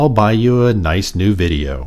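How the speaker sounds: plain reading voice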